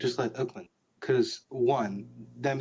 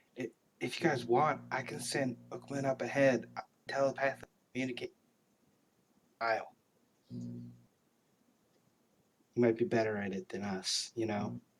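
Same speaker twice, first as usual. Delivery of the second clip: hushed half-whisper, breath only; 5 dB quieter than usual. Role-playing near the giant's lair, a player half-whispers back to the group, half-whispering. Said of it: "I whispered back".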